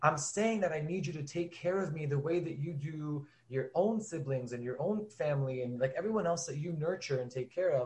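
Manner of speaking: mock pleading through tears, crying. Retelling pleading with a parent: retelling own past crying plea. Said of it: "not yelling, but actually also crying and saying".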